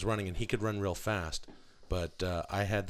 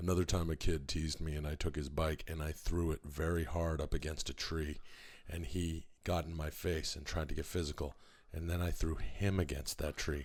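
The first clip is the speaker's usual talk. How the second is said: flat, lifeless monotone; 3 semitones lower, 3 dB quieter than usual. Recounting throwing a kid against a tree, no life in voice. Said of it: "there's still no life in your voice".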